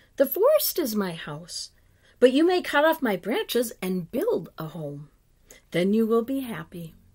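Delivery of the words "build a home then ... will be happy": ordinary delivery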